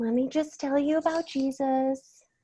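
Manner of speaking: soft, high kindergarten-teacher mothering voice. Describing how a woman delivered her whole sermon: imitating a mothering tone. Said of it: "Like that mothering".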